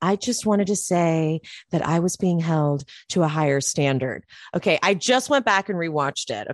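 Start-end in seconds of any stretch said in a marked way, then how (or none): 0.0-4.2 conspiratorial stage whisper. Retelling what Lisa said to Andy at the photo shoot: imitating Lisa whispering. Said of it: "starts whispering to Andy".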